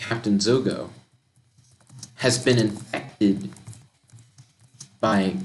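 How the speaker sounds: ordinary talk, nothing marked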